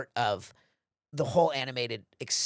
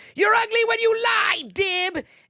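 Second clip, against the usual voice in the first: shrill, very high, very loud yell; 9 dB louder than usual. Retelling a scene from the movie: Zim voice. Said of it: "Zim says".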